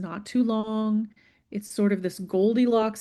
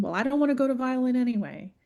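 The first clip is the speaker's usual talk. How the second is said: put-on child's sulky, defiant, tantrum-like voice; 3 semitones higher than usual. Acting out a child answering a parent: acting a child starting a tantrum. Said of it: "responds back with the beginnings of a tantrum".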